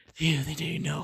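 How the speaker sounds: hushed, soft half-whisper. Retelling a story and voicing a character's half-whispered line: acting out a half-whisper. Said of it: "he was like whispering like".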